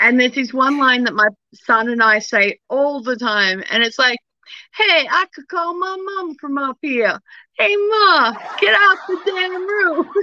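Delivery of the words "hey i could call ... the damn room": put-on down-home country accent, pitched up, not hillbilly. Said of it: "You've got that kind of country accent".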